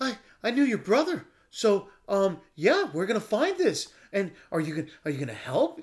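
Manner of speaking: mock out-of-breath talking. Speaker mocks how a man delivers his lines, imitating a winded voice. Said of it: "I just ran up a flight of stairs and trying to have a fucking conversation voice".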